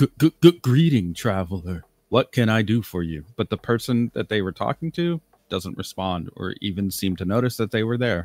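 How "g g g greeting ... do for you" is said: put-on elderly man voice, stuttering and stammering. Voicing an old man greeting a passer-by: old man voice. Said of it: "and the old man says".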